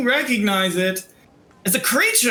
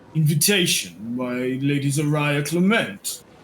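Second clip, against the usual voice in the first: cavernous, very low baritone cat voice; 7 semitones lower than usual. Narrating a scene, the speaker voices a talking cat in a very deep baritone. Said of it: "in like a very deep baritone voice that I can't hit".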